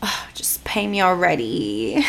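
whispered, bored, dismissive brush-off tone.

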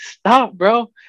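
put-on shrill, very high-pitched shriek. Retelling yelling at him to stop at the four-way, retelling a scream. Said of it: "and I'm screaming".

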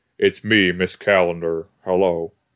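put-on deep male voice. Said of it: "a deep male voice or whatever".

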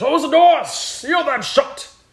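shrill, very loud, high, booming bellowing king voice. The narrator voices the king as everyone runs in, bellowing. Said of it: "The king bellows".

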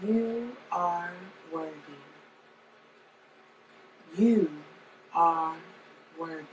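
hushed, calming, very soft soothing murmur. Showing how she'd say an affirmation: soothing voice. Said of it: "a soothing voice".

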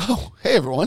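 radio announcer voice. Opening the episode after the sponsor read, the host greets everyone in a radio voice. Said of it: "What was that radio voice change that you just had?".

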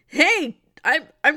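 high-pitched, loud, indignant calling out. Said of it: "this robber's just like".

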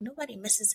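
muttering under the breath. Retelling own reply to a manager's comment: retelling a whisper under the breath. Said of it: "I was whispering under my breath".

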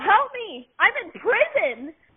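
high-pitched, desperate scream. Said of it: "was screaming to Michelle".

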